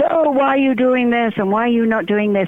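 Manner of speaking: put-on high, badgering rant. Retelling how a man came up to a woman's table, retelling a man's rant. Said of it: "starts ranting at her and saying".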